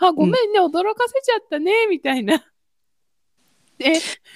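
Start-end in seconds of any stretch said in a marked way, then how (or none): 0.1-1.9 spoken through laughter, pitched up. Quoting the teacher's apology to the speaker, imitating laughing while talking. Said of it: "笑いながらね、".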